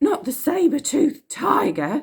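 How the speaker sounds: very high, swooping, shrieky cry. Reading a story aloud, a character cries out: exclaiming. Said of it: "exclaimed Dotty".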